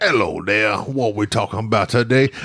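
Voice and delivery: put-on Louisiana accent. Host recalls greeting a caller from Louisiana, in a put-on Louisiana accent. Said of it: "I just love talking like this".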